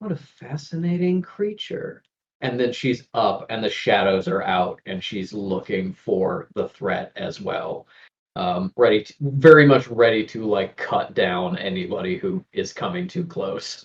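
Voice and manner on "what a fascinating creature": soft, higher-pitched murmur almost under breath. Voicing a character watching another, murmured under her breath. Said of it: "almost under her breath".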